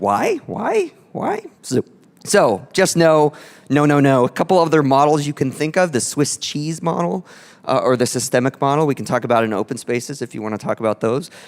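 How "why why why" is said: shrill, very high, rasping squawky parrot voice. Speaker mocks asking why over and over, parrot imitation. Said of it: "it always sounded like a parrot to me".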